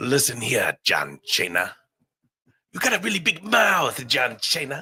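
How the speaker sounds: taunting tone with names mangled. Speaker recalls a wrestler who mispronounced names, then does a Santino impression. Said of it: "Are you Santino? ... no one better than Santino at mispronouncing names".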